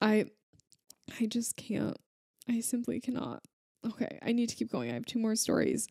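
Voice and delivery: teary, choked-up voice on the verge of crying. Sharing stories with the audience, getting teary. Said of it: "You guys are making me cry".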